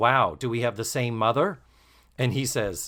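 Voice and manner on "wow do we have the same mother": usual speaking voice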